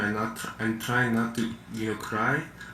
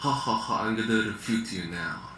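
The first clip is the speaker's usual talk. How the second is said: fake, taunting, put-on mocking ha-ha-ha laugh. Answering a debate opponent's question with a put-on mocking laugh. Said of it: "You sound, you sound like an".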